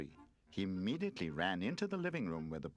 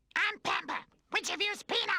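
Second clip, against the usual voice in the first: put-on horrible, very high, shrill shrieking baby voice; 7 dB louder than usual. Narrating a story as a new toy enters the room: Pampa's shrieking baby voice. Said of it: "she shrieked in that horrible baby voice".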